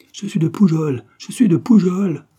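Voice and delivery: panicked, distraught high cry. Reading a French novel, Mourgue, seized by terror at the pistols, repeats in a frantic voice. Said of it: "Il répéta d'une voix éperdue".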